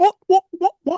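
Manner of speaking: put-on very high, loud baby alligator squeak.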